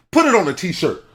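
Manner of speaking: very high, loud, shrill shouted outburst. Chiming in on another speaker's advice to listeners, yelling. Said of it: "I didn't mean to yell".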